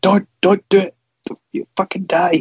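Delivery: put-on desperate, frantic shout, very high. Retelling shouting at the telly during a match: retelling a shout at the TV. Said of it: "actually shouting at the telly".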